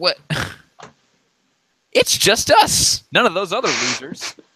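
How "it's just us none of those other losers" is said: exaggerated, disappointed wail. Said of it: "you sounded so disappointed there".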